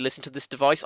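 normal talking voice

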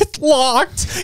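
mock, very high, desperate, pained squeak. Describing a Ring camera clip of a man at a locked door, imitating the pain in his voice. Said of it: "you can hear the pain in his voice".

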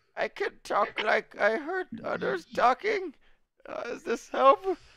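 very high, slow cute squeak. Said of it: "Can you make him talk cuter?".

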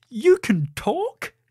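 very high, sudden blurted-out delivery. Narrator reading a princess speaking to a mouse, blurting out. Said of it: "couldn't stop herself from blurting out".

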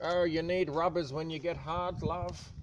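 high-pitched, cheeky, naughty auntie character voice. Voicing a character called Aunt May making a cheeky remark: Aunt May character voice. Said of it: "Aunt May, she's terrible".

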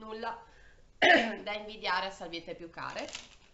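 loud coughing fits breaking up the words.

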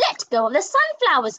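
lively, high, excited exclaimed shout. Showing how an exciting version of a story line sounds versus a boring one: exciting, shouted. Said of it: "what an exciting one looks like".

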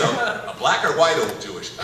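ordinary talk

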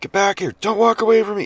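shrill, very high screaming yell. Retelling a man heard screaming outside at night: imitating a man screaming. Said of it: "guys screaming".

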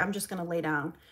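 plain

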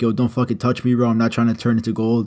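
normal talking voice

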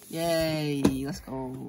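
flat, unenthusiastic cheer with no excitement. Opening a gift at the door, unenthusiastic. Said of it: "You sound so unenthusiastic".

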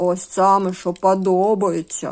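grumbling displeasedly. A narrator reads the dog's reply to his kitten friend: grumbling displeasedly. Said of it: "буркнув невдоволено Хобіт".

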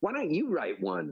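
mock haughty, lofty tone at very high pitch. Retelling one's own reply to someone nagging on a morning walk, in a haughty tone. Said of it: "in a haughty tone".

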